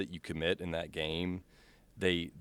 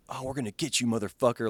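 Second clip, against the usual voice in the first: put-on, pitched-up, furious, vengeful voice; 6 semitones higher than usual. Retelling what enemies in the game shout: imitating angry enemies. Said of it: "they're angry that you killed their friend".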